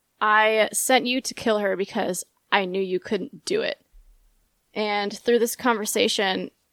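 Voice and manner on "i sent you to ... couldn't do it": plain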